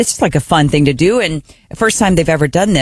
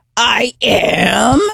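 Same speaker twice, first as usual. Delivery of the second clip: rough, growly, creaky voice, pitched up; 5 semitones higher than usual. Retelling how a kid answers when woken up: imitating Della's growly yes. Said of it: "like there's almost a growl in there".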